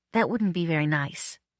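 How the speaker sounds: usual speaking voice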